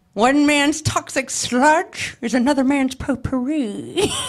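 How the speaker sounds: slow, deliberate, drawn-out storybook villain voice. Doing a requested impression of a movie line: Jim Carrey Grinch impression. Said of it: "can you do a little bit of it for us".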